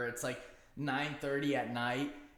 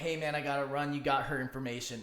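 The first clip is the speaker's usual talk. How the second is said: ordinary delivery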